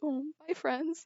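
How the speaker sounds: mock dejected tone. Retelling how he said goodbye when called back at camp, mimicking a sad goodbye. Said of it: "he goes back really sadly".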